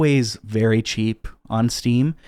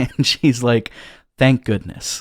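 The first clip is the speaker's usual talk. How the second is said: normal talking voice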